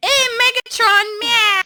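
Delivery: very high, squeaky toy voice. Mocking how a robot character sounds: Starscream voice like a dog's wind-up toy. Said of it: "he sounds like a fucking wind-up toy for a dog".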